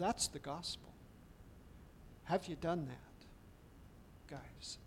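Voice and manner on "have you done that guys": tender, concerned tone. Speaker asking listeners a personal question, tender, with concern. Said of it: "And I say this tenderly, with concern".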